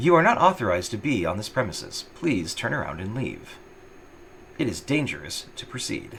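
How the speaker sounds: clean, sanitized, synthetic female robotic voice. Describing a robot telling someone to turn around and leave, in sanitized female robotic voice. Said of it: "that same kind of like you know sanitized female robotic voice says".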